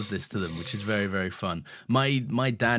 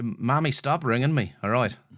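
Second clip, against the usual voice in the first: put-on Irish accent; 3 semitones higher than usual. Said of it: "Quite good".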